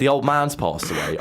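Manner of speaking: ordinary delivery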